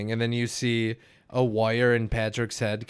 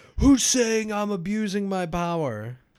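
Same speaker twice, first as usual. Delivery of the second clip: mock very high swooping cartoon screech; 9 semitones higher, 3 dB louder than usual. Retelling a cartoon scene, acting out the moment: Patrick screaming, imitated. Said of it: "Patrick gets huge and screams".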